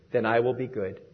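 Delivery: very low, quiet, subdued murmur. Retelling a child's reply to her teachers: imitating a very low, quiet voice. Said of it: "In a very low voice, she quietly said".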